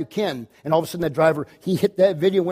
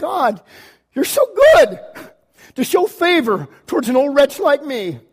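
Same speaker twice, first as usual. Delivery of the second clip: mock weeping through the words, voice pitched up; 8 semitones higher, 5 dB louder than usual. Retelling standing back listening in the theater room, retelling crying. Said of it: "I literally just start crying".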